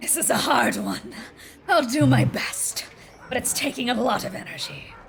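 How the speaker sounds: rasping, hoarse, dreadful voice. Voicing a medium summoning a spirit as the room rumbles: hoarse, horrid voice. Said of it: "in this hoarse, horrid voice".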